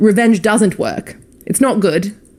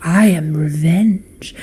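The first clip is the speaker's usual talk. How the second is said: eerie, spooky storytelling voice; 3 semitones lower than usual. Suggesting a vocal change for a character in the dark, spooky story voice. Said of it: "a spoopy story voice change".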